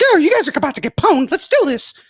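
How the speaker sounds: very high, swooping, squeaky cartoon mouse voice. Imagining what Mickey does after work, playing video games, in a Mickey voice. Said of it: "what does Mickey do when he gets off of work".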